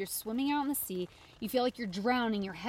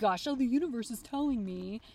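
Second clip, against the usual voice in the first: put-on, scoffing, sarcastic mocking tone. Speaker mocks people who follow signs from the universe: sarcastically mocking sign-seekers. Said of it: "Sorry to sound so sarcastic".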